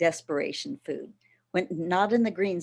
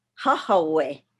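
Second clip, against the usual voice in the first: first syllable Ha of Hahawe stressed; 5 dB louder than usual. Explaining where the word jojoba came from, stress first syllable of Hahawe. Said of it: "with the emphasis on the full first syllable".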